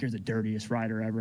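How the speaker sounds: put-on serious, grave, accusing tone. Retelling what another rider said after the race: imitating a serious accusation. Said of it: "He was all serious".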